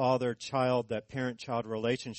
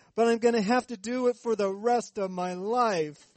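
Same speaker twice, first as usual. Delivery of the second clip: put-on, very high childish wail; 9 semitones higher, 4 dB louder than usual. Retelling what a daughter said to her father, imitating a wailing child. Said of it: "she wailed".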